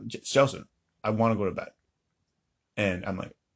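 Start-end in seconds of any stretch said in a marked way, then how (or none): none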